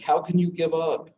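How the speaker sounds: high, loud, incredulous pleading tone. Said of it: "who were just incredulous".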